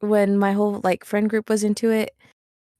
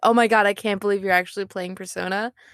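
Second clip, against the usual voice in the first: ordinary talk, nothing marked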